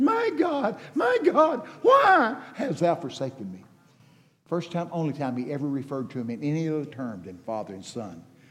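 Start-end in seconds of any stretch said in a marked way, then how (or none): 0.0-3.6 play-acted very high, loud, swooping cry of anguish. Preaching on the cross, acting out Jesus's cry: acting out Jesus's anguished cry. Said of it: "can you hear the anguish of his voice?".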